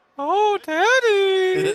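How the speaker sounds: very high, loud call, Daddy stretched long. Repeating the catchphrase with one word swapped: Paul Bearer impression. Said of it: "replace, oh, Undertaker with Daddy".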